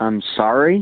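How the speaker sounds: rising, question-like intonation. Answering a girl's brother on the phone: rising, questioning tone. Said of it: "without it being such a, uh, question mark".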